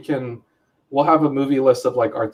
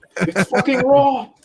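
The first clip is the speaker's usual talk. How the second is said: very high, berating, ranting chef voice; 9 semitones higher than usual. Joining in imitating a chef yelling in a kitchen: Gordon Ramsay impression. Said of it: "It's with Chef Gordon Ramsay".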